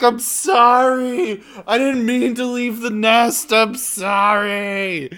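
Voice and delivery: put-on drunken bird voice. Acting out a drunk bird calling someone back: drunk bird voice. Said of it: "a drunk bird call would be like".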